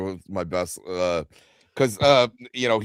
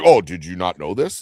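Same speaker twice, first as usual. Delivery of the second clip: mock deadpan, straight-faced delivery, louder; 7 dB louder than usual. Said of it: "he says it so, like, straight-faced".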